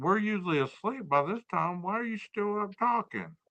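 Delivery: high-pitched put-on talking dog voice. Joking about what the other speaker's sleepy dog thinks: voicing the dog. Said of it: "your dog's like".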